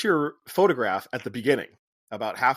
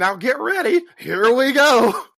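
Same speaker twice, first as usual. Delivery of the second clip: very high-pitched, loud cowboy holler; 12 semitones higher, 8 dB louder than usual. Picturing how a line would sound at a Disney ride, in a cowboy voice. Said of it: "I was picturing like a cowboy being like".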